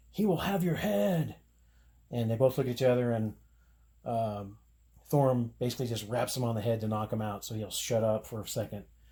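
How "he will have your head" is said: high, blustering, ranting, shouted outburst. Retelling a story where a captured man yells threats: retelling a yell. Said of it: "he's just yelling and spouting off".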